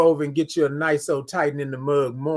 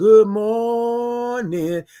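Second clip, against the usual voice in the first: high, long, drawn-out "morning", every letter stretched; 7 semitones higher, 4 dB louder than usual. Showing viewers how to say the greeting: drawn out, every letter stretched. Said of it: "I wanna have all the M's and O's and U's and R's and N's".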